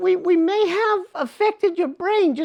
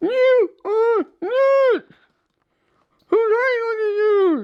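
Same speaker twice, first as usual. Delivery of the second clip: garbled, slurred, indignant, grumbling creature voice; 3 semitones higher than usual. In a puppet show, the reanimated patient reacts to the doctor's plan: slurred, hard-to-understand voice. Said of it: "Um, in the process of reanimating you, when um, we, we, we may have affected your brain just a little bit. / You can't hardly talk. ... Well, you might be a little hard to understand, / Uh, if you thi".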